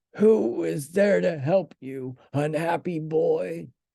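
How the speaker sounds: rough, grating, out-of-tune high voice. A narrator reads a voice answering Pinocchio's cries inside the shark: rough, out-of-tune voice. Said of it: "said a rough voice, like a guitar out of tune".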